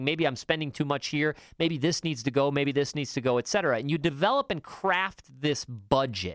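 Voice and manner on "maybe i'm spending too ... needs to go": usual speaking voice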